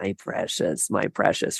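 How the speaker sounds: slow, breathy, drawn-out whispered murmur. Picturing a dog guarding her ball, imitating Gollum saying my precious. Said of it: "I'm picturing Dobby from Lord of the Rings".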